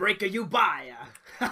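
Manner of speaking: acted alien character voice. Talking about Star Wars characters, doing a Watto impression. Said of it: "I want you to do the impression as well".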